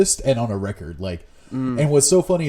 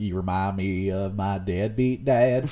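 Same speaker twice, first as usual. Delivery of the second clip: put-on Southern accent, quieter; 3 semitones lower, 4 dB quieter than usual. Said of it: "doing that really funny Southern voice".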